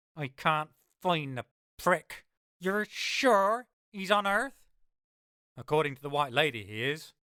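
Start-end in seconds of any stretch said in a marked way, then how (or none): 0.1-4.5 icy, cold fury, pitched up, dripping with frustration. Reading a novel aloud, Gwen questions the narrator over a tinny speaker, in cold fury. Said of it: "Her voice is cold fury".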